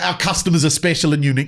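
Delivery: plain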